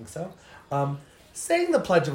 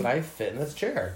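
ordinary talk

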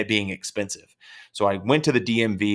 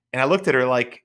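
ordinary talk

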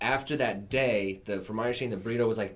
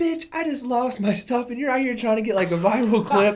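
very loud, very high, shrill angry tirade; 14 semitones higher, 9 dB louder than usual. Retelling how a crying lady snapped at a man asking how she feels, mock-angry outburst. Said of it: "this lady just goes clean off".

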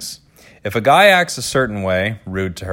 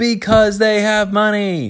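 put-on very high, slow, drawn-out emphatic voice; 12 semitones higher than usual. Reading all-caps advice text aloud: Z's voice for all-caps text. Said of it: "I guess I'm doing a Z's voice".

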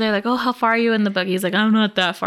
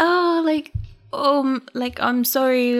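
slow, drawn-out put-on British accent; 4 semitones higher than usual. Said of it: "or he's British or English".

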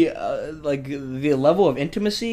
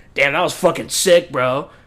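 hollow, ironic, sarcastic, fake-sounding tone; 4 dB louder than usual. Showing how a fist bump comes as a sarcastic thing: imitating a sarcastic compliment. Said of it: "a sarcastic thing".

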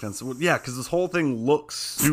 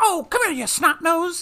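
put-on very high old-timey 1950s gangster voice; 3 dB louder than usual. Mocking how the criminals talk, the speaker does a 1950s gangster voice. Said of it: "they're like".

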